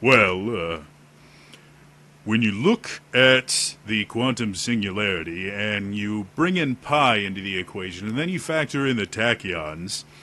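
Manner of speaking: brainy, intelligent-sounding, deep-voiced delivery. Showing a character voice that plays against the trope, deep intelligent voice. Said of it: "incredibly intelligent, deep voice".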